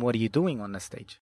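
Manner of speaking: ordinary talk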